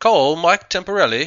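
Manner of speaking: very loud, high-pitched put-on British accent. Testing a phone's voice assistant with a spoken command, in an attempted British accent. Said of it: "now let me try it with my best possible British accent".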